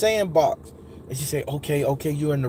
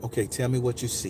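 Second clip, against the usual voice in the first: put-on smooth, soothing woman's voice, lower, quieter; 5 semitones lower, 6 dB quieter than usual. Recalling a trance, the speaker voices the woman guiding them: imitating a smooth, subtle voice. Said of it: "I hear this very smooth, subtle voice".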